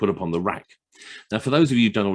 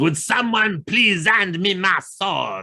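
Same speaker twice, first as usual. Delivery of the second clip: grand, theatrical, loud, high-pitched dramatic delivery; 11 semitones higher, 3 dB louder than usual. Retelling a story, the speaker quotes a man with a sword beside a blindfolded woman, acting out a loud, dramatic line. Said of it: "very loudly and dramatically says".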